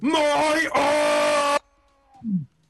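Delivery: furious, very high-pitched rage yell. Voicing a dwarf who stabs with a silver spoon: Winton yelling in rage. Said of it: "he yells at it".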